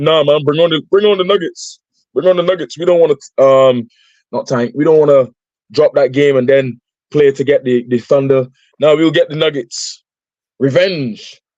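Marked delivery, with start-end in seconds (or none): none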